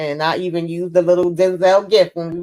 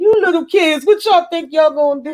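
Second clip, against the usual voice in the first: put-on very high, laughing, scornful, mocking jeer; 10 semitones higher than usual. Retelling how a character mocked some kids: imitating someone laughing at them. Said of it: "the way he was laughing at them".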